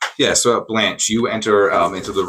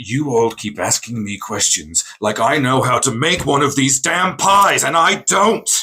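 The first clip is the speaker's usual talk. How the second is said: grumpy, cranky huffing outburst, rising high; 5 semitones higher than usual. Asked again and again how to make the pie, snapping back at everyone with grumpy yelling. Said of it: "Why are you yelling at Blanche?".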